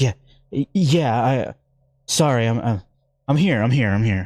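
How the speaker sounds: rattled, breathless, shaken, stumbling and slow. Voicing a character just recovering from a shock: shaken, heart racing. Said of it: "heart racing, adrenaline pumping".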